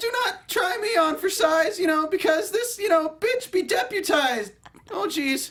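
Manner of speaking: put-on, very high cartoonish voice. Delivering a line as if Morty from Rick and Morty: Morty voice. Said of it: "said as if I'm Morty from Rick and Morty".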